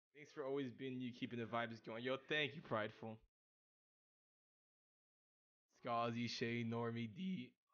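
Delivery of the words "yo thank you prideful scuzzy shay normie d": soft, slow voice cracking with emotion. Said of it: "what a voice crack".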